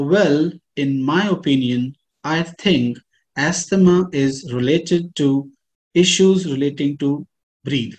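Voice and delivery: very slow, unhurried, deliberate delivery.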